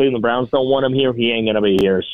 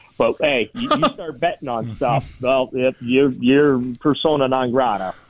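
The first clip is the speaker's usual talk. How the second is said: heavy sarcasm laid on really thick; 3 semitones higher than usual. Talking with another speaker about gambling bans in sports: laying the sarcasm on thick. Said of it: "I'm laying the sarcasm on really, really thick".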